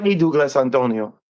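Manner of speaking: put-on thick Colombian Spanish accent. Recalling how a woman would tease him, quoting her in a heavy Colombian accent. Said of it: "from Colombia with like a heavy accent".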